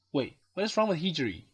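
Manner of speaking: ordinary delivery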